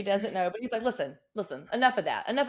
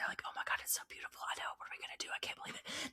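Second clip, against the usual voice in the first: hushed, weird, very quiet breathy whisper. Retelling how two people talked to each other: imitating someone whispering. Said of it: "They're whispering to each other in a weird way".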